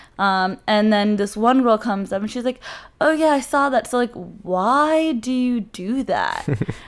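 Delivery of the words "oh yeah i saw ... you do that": slow, dismissive, condescending tone, "why" drawn out. Retelling what a girl at a party asked her, in a mock-condescending tone. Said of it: "In that exact tone".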